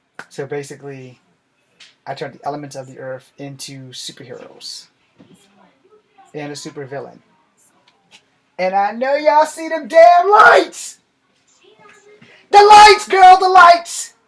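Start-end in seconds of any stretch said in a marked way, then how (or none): 8.6-14.1 very high, very loud, shrill, rising yell. Recapping a story to viewers, the speaker breaks off, yelling. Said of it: "I'm sorry for yelling".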